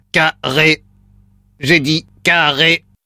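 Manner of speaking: flat, monotone, mechanical robot voice. Playing the robot that says a word to repeat back, in a robot voice. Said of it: "Voix de robot enclenchée".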